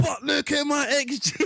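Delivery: mock high, drawn-out screaming. Retelling own past complaints about X G: imitating own past screaming. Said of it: "I'm screaming".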